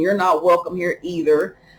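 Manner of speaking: ordinary talk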